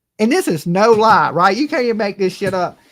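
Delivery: ordinary talk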